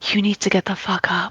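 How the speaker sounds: soft, hushed half-whisper under the breath. Healing a fallen ally and half-whispering down to him: half-whispering down to him. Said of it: "whispers down to him".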